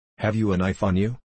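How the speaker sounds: ordinary delivery, nothing marked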